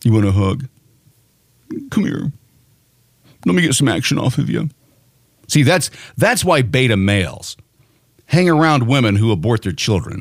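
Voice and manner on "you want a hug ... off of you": mocking, sneering, mock-consoling tone. Mocking how a man consoles a crying protester: mocking imitation of a consoling man. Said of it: "what does he say?".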